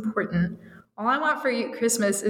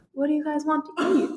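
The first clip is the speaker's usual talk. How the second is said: bashful, shy, timid, hesitant, pitched-up small voice; 6 semitones higher than usual. Reading a story aloud and redoing a question to the guys, in a shy tone. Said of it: "that wasn't a shy tone".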